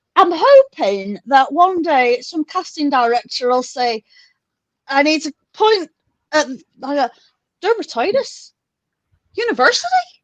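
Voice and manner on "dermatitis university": put-on Irish accent, pitched up. Joking about what a casting director might say, speaker uses an Irish accent. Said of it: "I can do some Irish".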